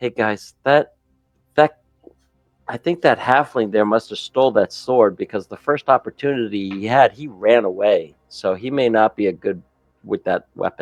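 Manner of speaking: secretive, hushed half-whisper. Voicing a character who warns the group about the halfling: half-whispering. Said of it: "Barnaby's gonna be whispering".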